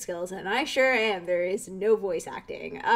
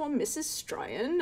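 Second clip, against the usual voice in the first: high-pitched put-on British accent, motherly voice. Speaker voicing a character's mother in a skit, British accent. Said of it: "I have no idea why I made her mother British".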